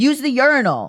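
shrill yelled delivery. Retelling what a bathroom attendant yelled at the speaker while waiting, imitating someone yelling. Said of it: "he yelled at me and was like".

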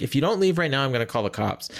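usual speaking voice

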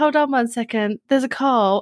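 put-on small child's playful make-believe voice. Retelling a childhood balcony show for the family, imitating playing Barbie. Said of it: "And then I'd go".

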